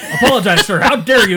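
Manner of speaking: high, loud, mock scolding voice. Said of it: "he's like".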